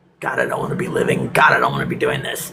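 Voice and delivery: very low, weary, despairing groan-like inner voice.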